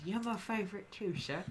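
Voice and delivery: very quiet, half-whispered voice. Voicing a character who half-whispers back to another character: half-whispering. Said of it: "he'll whisper back to Calix".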